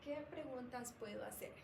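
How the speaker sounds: usual speaking voice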